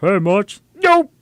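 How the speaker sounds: very high, loud guttural voice. Explaining how the voice is made, the speaker demonstrates it: Homer Simpson voice, tongue pulled back. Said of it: "Echo la lengua para atrás".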